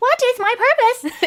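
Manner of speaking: very high-pitched character voice. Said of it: "how was my Hatsune Miku impression?".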